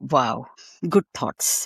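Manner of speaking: ironic, insincere, sarcastic mocking tone. Reacting to news that Oxford wanted to shut the institute down: sarcastic. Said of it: "I'm being sarcastic".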